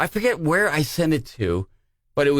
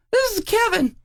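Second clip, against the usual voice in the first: put-on squeaky, very high young boy voice. Retelling answering the phone as a kid, high-pitched kid voice. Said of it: "I had a very high pitched voice as a kid".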